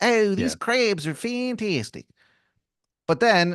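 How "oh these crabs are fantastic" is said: very high, slow, put-on Maryland accent. Imitating a man who talks about crabs: Maryland accent. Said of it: "a Maryland accent".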